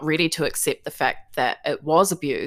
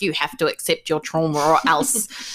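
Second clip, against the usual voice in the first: spooky, storybook-style witch voice. Speaker showing how they don't want to sound, in a witchy voice. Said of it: "in a witchy voice".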